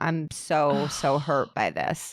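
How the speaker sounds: very slow voice, near tears, tearful and held back. Retelling what a restaurant owner said in a documentary: imitating someone holding back tears. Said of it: "She was just holding back tears".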